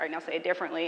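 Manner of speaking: usual speaking voice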